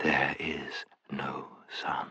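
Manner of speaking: very hushed, soft, deep and hypnotic voice. A narrator reads the witch repeating her words to the group, softer, deeper voice. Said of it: "in a softer and deeper voice".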